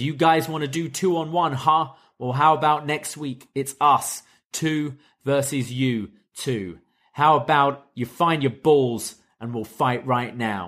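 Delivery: ordinary talk, nothing marked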